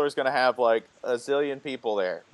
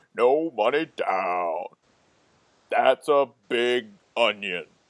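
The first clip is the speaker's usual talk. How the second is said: warped, garbled, distorted background announcer voice; 3 semitones lower than usual. Recalling an old ad from the late 1980s, the speaker does its distorted voice. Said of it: "somebody with this distorted voice would go".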